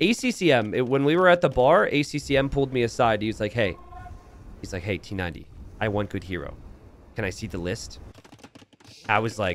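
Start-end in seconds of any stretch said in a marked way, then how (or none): 4.8-8.0 whisper, lower pitch and quieter. Retelling a player asking at a bar to see a hero list: imitating ACCM whispering. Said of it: "stop whispering".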